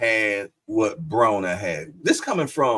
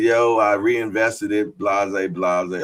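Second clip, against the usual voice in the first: ordinary talk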